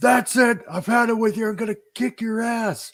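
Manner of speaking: mock abrupt shout, high and sudden. Retelling a bar fight, a stranger threatening: imitating a man yelling. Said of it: "he just looks at me yelling".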